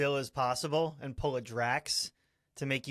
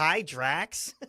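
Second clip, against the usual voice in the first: sweet, innocent little voice; 2 semitones higher, 4 dB louder than usual. Quoting a movie scene where a character greets Drax: imitating Mantis. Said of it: "Just the way she says it".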